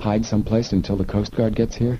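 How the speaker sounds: ordinary delivery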